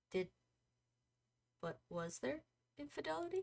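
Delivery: soft, hushed, quiet and slightly high. In a roleplay scene, a man asks a father about infidelity: quiet voice. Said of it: "in a quiet voice".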